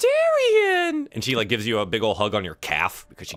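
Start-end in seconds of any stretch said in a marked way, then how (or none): 0.0-1.1 very high, all-excited squealing call. Voicing a girl greeting Darian with a hug: all excited. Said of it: "she gets all excited".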